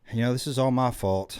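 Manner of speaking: ordinary talk, nothing marked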